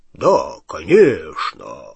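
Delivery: very low, deep, swooping disguised voice. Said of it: "низким голосом Ранкорна ответил Гарри".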